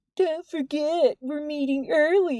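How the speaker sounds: unflattering, mocking, snide voice pitched high. Jordan opens the door and repeats Nyx's words in an unflattering Nyx imitation. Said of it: "in an unflattering imitation of her voice".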